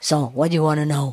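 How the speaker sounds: put-on elderly man's voice. Retelling what the puppy said back: imitating an old man's voice. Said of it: "he talked like an old man".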